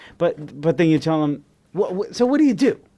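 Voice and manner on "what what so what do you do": desperate pleading. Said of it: "try to do all this desperate shit".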